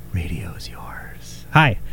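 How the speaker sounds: eerie, creepy, breathy half-whispered delivery. On the radio, saying hello in a weird, creepy way. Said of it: "I just said that in the weirdest, creepiest way".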